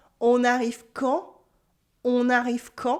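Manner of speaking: rising, question-like intonation on quand. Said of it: "with my voice going up".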